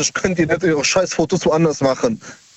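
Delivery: ordinary delivery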